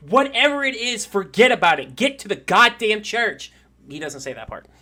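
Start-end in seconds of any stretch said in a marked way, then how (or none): 0.1-3.5 high, loud, screaming preacher voice. Voicing a preacher who screams at the others: preacher screaming. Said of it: "you hear the preacher scream".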